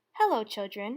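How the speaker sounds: sweet, gentle-toned voice. Reading a story, someone arriving greets the children: sweet voice. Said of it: "said someone in a sweet voice".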